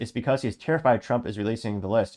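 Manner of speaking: plain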